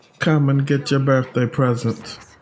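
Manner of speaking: put-on poor Caribbean accent. Repeating a game line aloud in a horrible Caribbean accent. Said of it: "that was a horrible accent".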